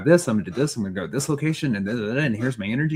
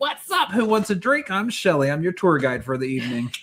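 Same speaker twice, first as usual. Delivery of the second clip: bold, high-pitched, barging-in party exuberance; 6 semitones higher than usual. Retelling how Shelly bursts through doors: imitating Shelly bursting in. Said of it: "She's like".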